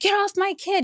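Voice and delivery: re-enacted scream. A parent recounts their kid's wrestling match, retelling their own screaming. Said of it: "I'm like screaming".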